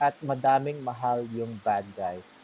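ordinary talk

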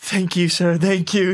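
scared, frightened tone. Voicing villagers who bow and take oranges from the cat: scared villagers thanking. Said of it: "like they're kinda scared of it".

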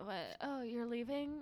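very quiet, just-woken, drowsy murmur. Acting out a scene as Hugh Grant just woken up: sleepy Hugh Grant. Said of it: "I'm Hugh Grant sleepily".

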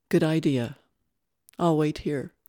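ordinary delivery, nothing marked

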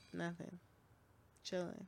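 exhausted, barely-there, whispered mumble. Asked by a caller how the day went, a character answers tired, exhausted. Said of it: "You sound like you had an exhausting day".

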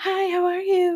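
very high-pitched, sugary sweet niceness. Retelling how an overly nice man greeted the speaker, imitating a soft-spoken sweet voice. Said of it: "soft-spoken, sweet-natured person".

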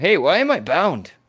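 strange character voice, high and very loud. Voicing a confused character who finds himself bound, odd NPC voice. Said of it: "I don't know why his voice is like that now".

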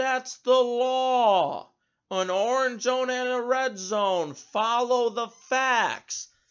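mock condescending yell, slow and high, drawn-out law. Quoting what the governor yelled in reply to a confused question, retelling a yell. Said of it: "he yells".

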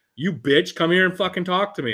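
play-acted enraged, high-pitched furious screaming. Retelling how a mom ran down another mom: imitating a mom yelling. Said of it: "start yelling".

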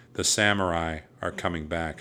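ordinary talk

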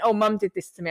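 mock matter-of-fact, flat tone. Retelling what a child said: imitating a child's matter-of-fact tone. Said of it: "kids say it's so matter of fact".

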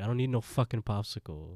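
plain

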